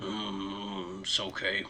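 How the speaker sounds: very low, very quiet grumble, drawn-out mm. Storyteller voicing Zarash replying to an apology, grumbling. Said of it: "as he kind of grumbles".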